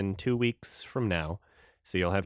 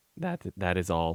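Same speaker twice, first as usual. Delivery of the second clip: cracking, breaking voice mid-line; 3 semitones lower than usual. A podcast host wrapping up the episode for listeners, voice cracking. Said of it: "My voice just cracked".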